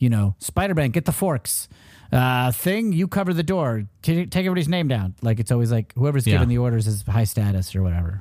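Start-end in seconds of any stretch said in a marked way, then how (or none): 0.4-5.1 mock-barked tone, higher pitch. Discussing comic-book leaders, the speaker imitates Captain America barking orders at teammates. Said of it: "They bark orders".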